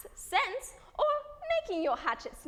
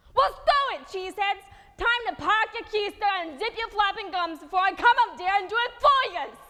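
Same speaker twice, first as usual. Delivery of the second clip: put-on Brooklyn accent, loud, blunt, direct; 2 semitones higher, 8 dB louder than usual. Giving rambunctious types at the back of the class a taste of the brooklyn accent. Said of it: "that was a taste of the Brooklyn accent".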